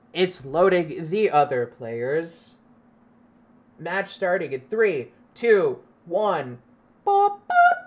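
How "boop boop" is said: tiny, very high electronic beeps. Imitating the match starting countdown: Halo match-start beep impression. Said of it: "my Halo in-, impression for the match starting".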